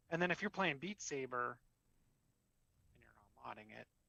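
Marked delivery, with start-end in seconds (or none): 2.9-3.8 barely audible, very quiet, hushed, under the breath. Mentioning not modding a game while talking about costs: said very quietly. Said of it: "notice I said that very quietly".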